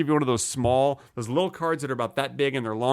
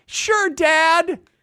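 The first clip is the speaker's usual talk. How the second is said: put-on very high, loud child's voice; 5 dB louder than usual. Imitating his son accepting cereal for breakfast: imitating his son. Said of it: "my impression of my son".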